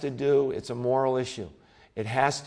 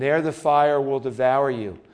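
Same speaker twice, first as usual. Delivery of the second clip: ordinary talk, nothing marked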